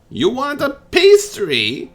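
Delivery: put-on cackling old lady voice. Voicing an old lady who looks back at her chasers: cackling old lady voice. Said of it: "the old lady looks over her shoulder and cackles".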